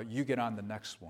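quiet, mocking terrible tone. Speaker retells what a uniformed man said as the elevator doors opened; retelling a terrible tone. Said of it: "in a terrible tone of voice".

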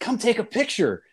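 very high, urgent, insistent yelling. Retelling a group photo during a broadcast, imitating Robin Yount yelling. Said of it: "he starts yelling at me".

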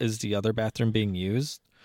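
normal talking voice

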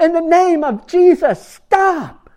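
very loud, very slow, shrill, drawn-out booming yell. Retelling how a monk shouted at the crowd: retelling a yell. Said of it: "he's yelling".

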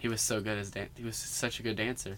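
very soft, hushed, dry, flat deadpan sarcasm. Joking about an actor's dancing in Newsies, sarcastic. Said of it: "That was sarcasm".

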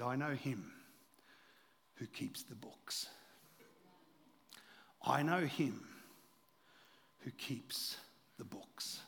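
mock Indian accent, deep and slow. Speaking to a church, retelling a man's reply from a story, imitating Dr. Abel's deep Indian accent. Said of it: "he said it with that deep Indian accent".

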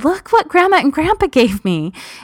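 mock very high, gleeful, delighted little kid voice. Retelling a son showing off a new toy: imitating a child's delight. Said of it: "with such, like, delight in his eyes, saying".

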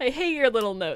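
loud, condescending, belittling, talking-down delivery. Retelling Mulder mocking Scully's notes: imitating Mulder being condescending. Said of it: "It's very condescending".

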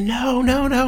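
acted-out, very high, raspy, rough, drawn-out shouted yell. Recalling seeing a man bounce an unconscious guy around, retelling a yell. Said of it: "I'm yelling like".

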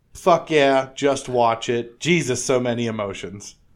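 ordinary talk, nothing marked

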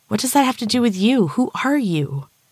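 desperate, urgent, high-pitched voice. Rhea speaking desperately to the unknown man. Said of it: "she said desperately".

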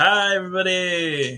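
animated, high cartoon doctor voice. A guest just introduced on the show greets everyone, sounding like the doctor from The Simpsons. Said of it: "You sounded like the doctor from The Simpsons".

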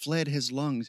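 ordinary delivery

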